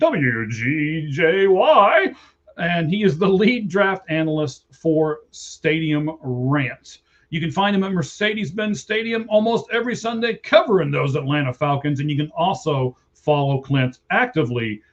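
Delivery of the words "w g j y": very slow, swooping radio DJ announcer voice. Introducing a guest's radio station call letters in a radio DJ voice. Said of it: "let me do it like a D J".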